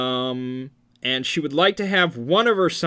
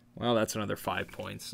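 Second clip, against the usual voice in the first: plain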